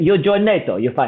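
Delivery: imitated Russian accent. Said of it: "I can tell you've been working on that accent".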